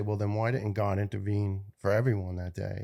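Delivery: ordinary delivery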